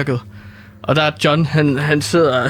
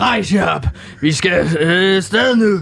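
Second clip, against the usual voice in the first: slow, unhurried, called-out rallying voice; 4 semitones higher than usual. Speaker retells a man addressing his tired colleagues, retelling a shout. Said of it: "og så råber han".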